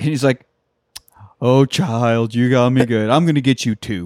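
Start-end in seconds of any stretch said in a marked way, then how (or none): 1.4-4.1 mock, wholesome-sounding dad voice. Retelling how a dad replied to his daughter's joke, imitating wholesome-sounding dad. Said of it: "very wholesome sounding".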